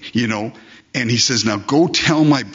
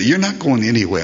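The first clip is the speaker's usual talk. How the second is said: put-on little-girl voice, insistent. Speaker quoting a girl who didn't want them to leave: Chloe's little voice. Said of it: "in her little Chloe voice".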